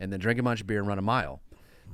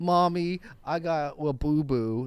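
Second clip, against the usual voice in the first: put-on very slow, drawn-out little-kid voice; 5 semitones higher than usual. Acting out a skit idea where a kid runs to mom: kid voice. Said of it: "A kid runs up to their mom and it's like".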